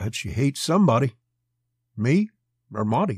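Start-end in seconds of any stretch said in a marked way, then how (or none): none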